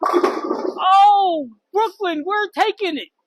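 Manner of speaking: drawn-out, very slow, high-pitched yell. Commenting on the play as brooklyn takes it, yelling. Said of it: "Sorry for yelling in your ear".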